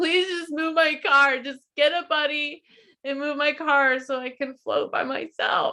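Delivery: high, tearful, crying, pleading voice. Retelling begging a taxi driver on the phone: retelling a crying plea. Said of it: "crying on the phone to the taxi man".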